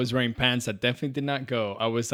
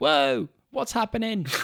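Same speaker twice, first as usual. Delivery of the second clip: put-on British accent, higher-pitched; 7 semitones higher than usual. Describing a game sidekick introducing herself mid-fight, in Kaylee's British accent. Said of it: "She has a British accent and she's like".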